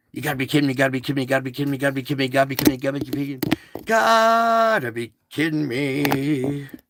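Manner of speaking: put-on rapid-fire storm chaser voice, rattled off. Imitating someone repeating a catchphrase really fast: rapid-fire Reed Timmer impression. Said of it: "And then he says it really fast".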